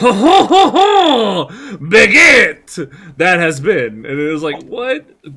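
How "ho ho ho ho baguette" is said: French man voice, every ho stretched and belted. Describing Kel's bathtub sketch, acting out his Frenchman character. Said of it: "as this Frenchman".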